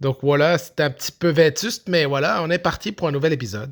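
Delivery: poor put-on Quebec accent. Podcast host opening a new episode: bad fake Quebec accent. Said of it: "pourquoi je fais un mauvais accent du Québec?".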